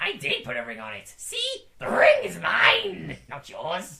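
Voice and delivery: put-on creature voice, loud with swooping pitch. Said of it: "all you hear is Gollum going".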